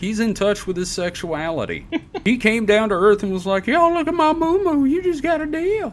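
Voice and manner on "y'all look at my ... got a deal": very high, creepy, sleazy cartoon-creep voice. Acting out what he said on coming down to Earth, in a Family Guy pervert guy voice. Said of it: "they all end up sounding like the pervert guy from Family Guy".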